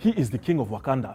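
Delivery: heavily laid-on, really bad Nigerian accent.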